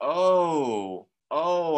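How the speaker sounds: pretend surprise. Teaching vowel sounds, demonstrating the long O: acting surprised. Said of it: "it's as if we're surprised".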